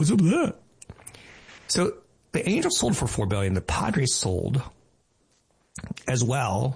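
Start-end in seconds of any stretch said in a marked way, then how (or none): 0.0-0.5 put-on high, casual kid-speak. Questioning a low stock valuation, imitating son's way of talking. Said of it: "so he'd say something like".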